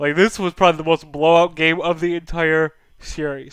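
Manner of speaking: speaking through a yawn. Recapping a game on a podcast, speaking through a yawn. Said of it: "Sorry for yawning".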